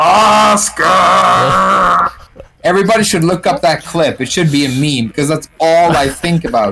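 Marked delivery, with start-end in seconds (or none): 0.0-2.1 harsh, raspy, rough-edged high scream. Retelling a children's film scene: Pippi Longstocking screaming in deep male voice. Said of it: "she's screaming in a deep male voice".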